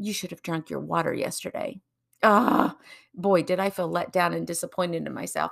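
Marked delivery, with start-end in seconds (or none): 0.0-1.8 put-on mumbling, muttering under breath. Recalling muttering to themself, retelling a mumble under breath. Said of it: "I mumbled under my breath".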